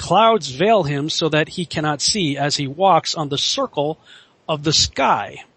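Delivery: normal talking voice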